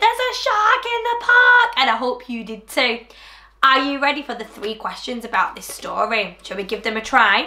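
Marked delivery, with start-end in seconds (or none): 0.0-1.7 shrieked, gleeful high voice. Recalling the story's big line for young listeners: screaming. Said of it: "I love screaming".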